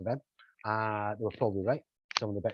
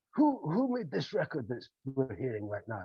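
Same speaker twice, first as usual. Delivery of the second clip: put-on very posh, plummy old-style English, swooping up and down; 4 semitones higher than usual. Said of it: "very, very posh".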